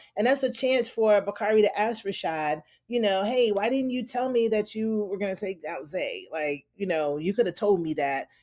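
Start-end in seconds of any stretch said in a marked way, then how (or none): none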